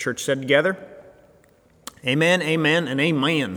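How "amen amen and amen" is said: put-on amen in Southern accent. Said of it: "Why did I use a Southern accent?".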